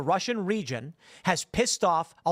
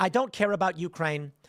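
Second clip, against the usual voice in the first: ordinary delivery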